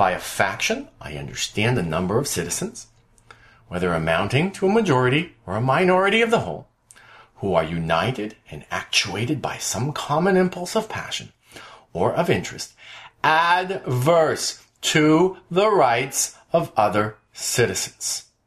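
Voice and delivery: slow, deliberate, careful reading, each phrase drawn out. A speaker reads a passage aloud to listeners, more slowly. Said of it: "I'm going to read this more slowly".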